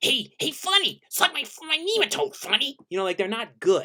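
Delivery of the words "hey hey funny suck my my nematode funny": deliberately bad put-on voice, very high, swooping, sing-song. Showing the weird voices done for fun: bad Roger Klotz voice. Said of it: "like Roger Klotz, I'm like".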